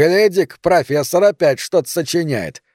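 taunting, scornful, mocking jeer. Sandro grabs Roman's notes and addresses the others, mocking. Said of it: "с издевкой сказал Сандро".

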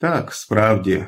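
almost calm, nearly composed. Carmichael answers Robinson's outburst almost calmly. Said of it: "майже спокійно сказав Кармайкл".

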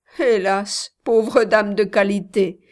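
spoken with a laugh. A woman teases the narrator about her small daily wages: laughing. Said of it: "dit-elle encore en riant".

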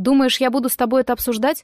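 plain

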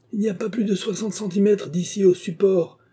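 very high, loud officer's shout. A narrator reads an officer's line urging the others across: shouted. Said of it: "cria l'officier".

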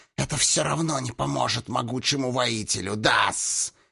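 rough, cheeky, insolent hiss. Narrator reading Hiss's reply to the destroyer, hissing insolently. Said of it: "дерзко прошипел Хис".

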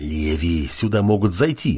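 plain

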